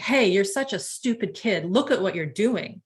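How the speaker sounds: mock harsh, cutting, belittling scolding tone. Acting out him saying shaming words, in a mock-harsh scolding tone. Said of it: "Like I just changed my tone".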